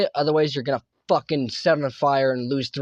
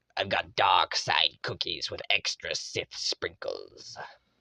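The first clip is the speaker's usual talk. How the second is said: very slow, dark villain voice, each word dragged out; 9 semitones lower, 7 dB quieter than usual. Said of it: "I love your Emperor Palpatine voice".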